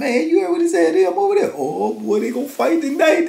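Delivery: put-on giggly laughing speech. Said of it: "And he over there giggling".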